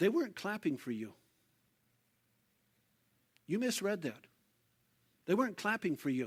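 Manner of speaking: very quiet, hushed, private-sounding voice. Retelling what someone said to another in a circle backstage: imitating someone speaking very quietly. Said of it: "he just very quietly said".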